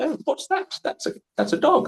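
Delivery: put-on very high little-kid English accent. Imagining kids in china who copy the speaker's accent: kids imitating an english accent. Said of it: "with my accent, English accent, going".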